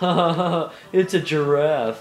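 put-on cartoon voice. Recalling a SpongeBob episode, doing a laughing Patrick voice. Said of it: "laughing with his old voice, and he goes".

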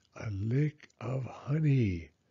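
low, slow murmur muttered under the breath. While Owl talks on, Bear murmurs to himself. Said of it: "murmured Bear to himself".

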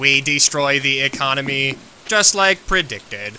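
silly, goofy, mechanical robot voice. Playing a robot character, speaking in a goofy robot voice. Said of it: "I have the goofiest robot voice".

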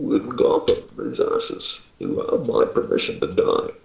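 clumsy, rough, creaky villain voice, half-botched. Speaker offering impersonations to the group, doing a bad Bane impression. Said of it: "I can do an impersonation of Bane very poorly".

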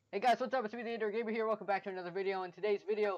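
talking very fast, rapid-fire. A youtuber opening a video intro for viewers, talking very fast. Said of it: "are you talking so fast?".

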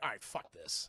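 low, grumbling voice.

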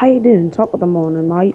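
put-on fake Australian accent. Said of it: "that's Australian".

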